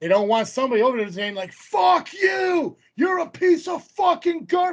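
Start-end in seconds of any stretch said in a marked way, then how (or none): 1.5-4.7 shrill, very high, drawn-out heckling yell. Describing what kids at wrestling shows shout, imitating kids yelling insults. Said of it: "these are kids yelling this shit".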